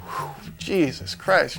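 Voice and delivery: talking through a breathy, laughing exhale. Retelling what a cop said after the struggle: imitating someone laughing while talking.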